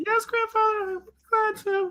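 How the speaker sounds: very high, small and faint little voice. Retelling a grandfather calling Elizabeth to make food, and her reply: Elizabeth's little faint voice. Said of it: "a little faint voice that says".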